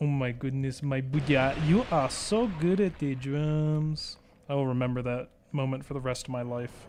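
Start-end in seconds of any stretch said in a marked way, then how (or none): 0.0-4.1 put-on Ugandan accent, "drums" stretched long. Recalling praise from a Ugandan drum group: imitating a Ugandan accent. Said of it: "But they go".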